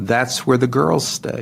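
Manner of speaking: flat, deadpan delivery. Recounting a man's answer to another man's question, retelling a deadpan reply.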